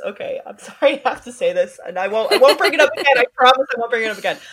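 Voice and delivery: words broken up by laughter. Apologizing for bringing up a topic again, laughing while talking. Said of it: "I'm laughing".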